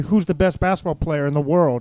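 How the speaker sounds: ordinary talk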